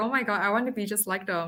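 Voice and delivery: ordinary talk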